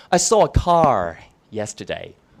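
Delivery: low-pitched General American English accent. Speaker contrasting British and American English pronunciation: American English accent. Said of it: "American English".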